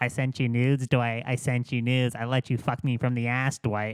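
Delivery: mimicked female voice. Retelling a woman's accusations from a phone call: imitating the woman's voice. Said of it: "in her, like, voice".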